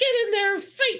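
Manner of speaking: very high, squeaky character voice. Voicing a foe during the fight, in a squeaky voice. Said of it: "squeaky voice".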